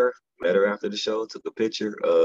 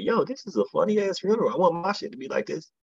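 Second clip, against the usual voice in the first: excited, marveling exclamation, much higher pitch. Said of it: "And I'm like".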